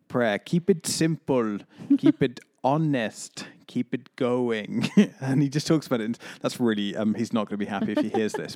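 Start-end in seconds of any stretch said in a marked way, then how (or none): 0.1-4.9 put-on slow, fun, playful Italian accent. Praising Brother Luigi from the Alpha film series, quoting him in Brother Luigi's fun Italian accent. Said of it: "He's got like a really fun Italian accent and he's like".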